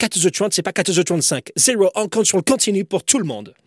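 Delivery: put-on American accent in French. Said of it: "avec son accent américain".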